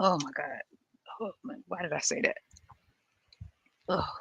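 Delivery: hushed, queasy, gagging, grossed-out mutter. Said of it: "I just grossed myself out".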